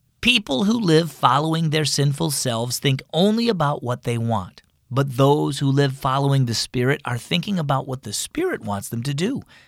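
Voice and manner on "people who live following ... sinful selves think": ordinary delivery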